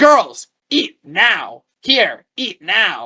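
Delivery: acted-out shouting, every word dragged very slow. Retelling how a lady at a closing food court called to two young girls: imitating a woman screaming. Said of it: "And she was screaming".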